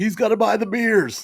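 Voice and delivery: high-pitched, slow, taunting heckling scream.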